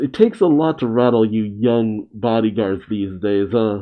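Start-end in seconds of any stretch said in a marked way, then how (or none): none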